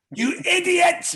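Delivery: high, loud, snapped sat-nav voice. Joking about recording sat-nav directions: put-on aggressive GPS voice. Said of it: "record a G P S for the next thing with just really aggressive directions".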